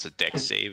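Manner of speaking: normal talking voice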